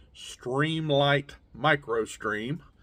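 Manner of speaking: very slow, deliberate, drawn out word by word. Listing what he carries, naming his flashlight: said real slow. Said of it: "gotta say this real slow".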